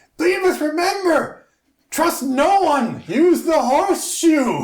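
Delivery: very high, shrill, hollered shout. Narrator voicing a filthy man waving a horseshoe at the party's backs, shouting after the group. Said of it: "waving it and shouting at the backs of you".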